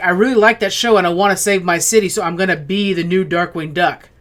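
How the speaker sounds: ordinary talk, nothing marked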